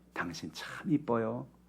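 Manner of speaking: very hushed, soft, sincere, earnest, loving tenderness. Demonstrating a compliment that must not sound teasing, in an earnest, loving tone. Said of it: "진지하게 사랑을 담아서".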